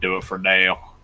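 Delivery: put-on rural American country accent. Obliging a request to say a line for dale: country accent. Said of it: "I'll do it in a country accent for you".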